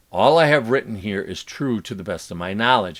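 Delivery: plain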